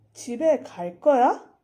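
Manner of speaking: rising pitch at the end on 거야. Korean lesson on asking a question: pitch rising on final 거야. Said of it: "you're literally increasing the pitch of what you're asking at the end".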